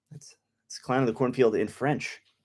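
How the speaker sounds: ordinary talk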